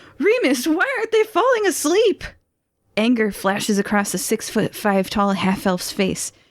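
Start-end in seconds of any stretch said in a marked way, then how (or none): 0.2-2.2 panicked, scared yell, higher pitch. Voicing a panicked goon backing away, calling to his boss: panicked shout. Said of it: "He shouts".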